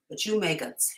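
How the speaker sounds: ordinary delivery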